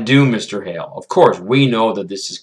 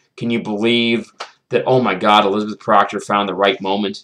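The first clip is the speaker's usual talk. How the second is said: ordinary talk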